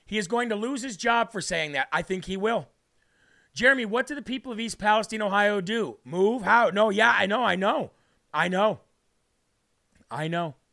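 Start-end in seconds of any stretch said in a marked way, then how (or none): none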